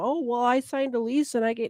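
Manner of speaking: scornful, dismissive, derisive voice. Mocking the excuse that squatters always give: mocking imitation of a squatter. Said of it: "that's their story every time".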